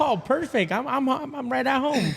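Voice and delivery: delighted, pleased exclaim, high and soft.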